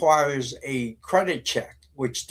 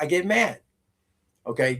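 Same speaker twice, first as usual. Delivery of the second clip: ordinary talk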